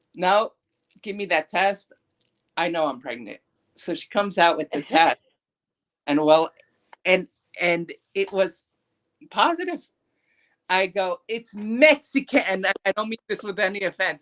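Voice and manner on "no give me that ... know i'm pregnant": ordinary talk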